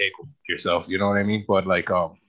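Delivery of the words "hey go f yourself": ordinary talk, nothing marked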